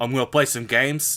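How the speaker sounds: put-on New York Italian accent. Imagining someone called Red Cannoli introducing a gaming session: Red Cannoli New York Italian accent. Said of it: "like that like really New York accent".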